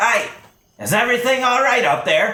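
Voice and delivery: loud, very high, hollered call. Guards at the foot of a guard tower call up to it, shouting up a tower. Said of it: "and they shout up it".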